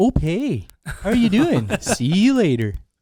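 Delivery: Minnesotan-Canadian character accent, high and loud. Speaker demonstrating their Canadian Minnesotan character's call sign, in a Canadian Minnesotan accent. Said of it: "the Canadian Minnesotan is".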